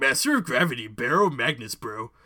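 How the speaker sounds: low, dropped cartoon tough-guy bro voice. Announcing a game character to the group, Muscle Man voice. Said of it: "let me get my Muscle Man voice ready".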